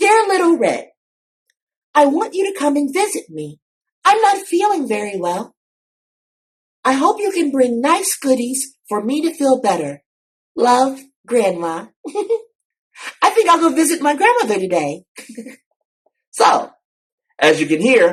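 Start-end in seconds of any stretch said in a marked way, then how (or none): 0.0-15.0 small, light, very high, ladylike voice. Demonstrating a storybook character's voice to listeners, in a Little Red voice. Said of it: "lighter and a little bit smaller and a lot more ladylike".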